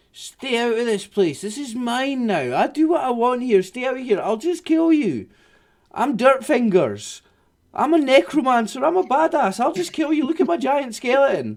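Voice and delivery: very high, cackling, boastful tone. Game master voicing Dirtfingers, a necromancer warning the players away, cackling. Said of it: "cackles at you".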